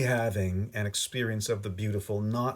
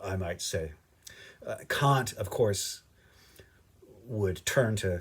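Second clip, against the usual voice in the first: plain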